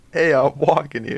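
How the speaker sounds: put-on New York accent. Chatting about Adam Sandler movies, the speaker does a New York accent impression. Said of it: "That's my impression of New York accent".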